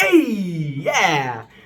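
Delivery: joyful, excited bursting cry, drawn out. Showing how sounds come out when happy: happy excited sound. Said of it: "or happy".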